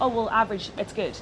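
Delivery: ordinary talk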